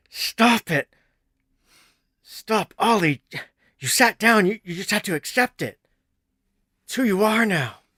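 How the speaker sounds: very high, loud, gritted, pained voice.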